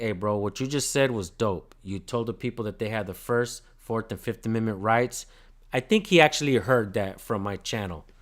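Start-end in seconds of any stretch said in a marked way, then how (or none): none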